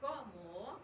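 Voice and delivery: cómo lifted up at the end with rising intonation.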